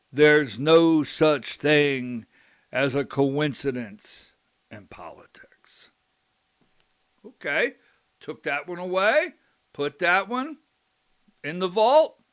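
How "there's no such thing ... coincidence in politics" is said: big, heavy, deep voice of authority. Retelling what an older political figure answered about coincidences, imitating a big deep voice. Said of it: "he said in a big, deep voice".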